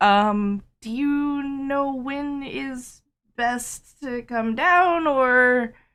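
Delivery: very slow, high, drawn-out voice fading away. Voicing a character thanking bartholomew for a key: trailing off. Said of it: "I trail off".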